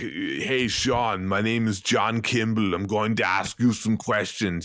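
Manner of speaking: put-on German accent. Imagining a film character introducing himself to Sean, in a thick Austrian-German accent. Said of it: "thickest Teutonic, German, Austrian accent imaginable".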